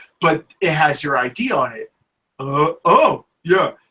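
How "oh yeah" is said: high, loud cartoon-style voice. Speaker acts out a found-wallet exchange, Patrick Star impression. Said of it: "Let me do my Patrick impersonation".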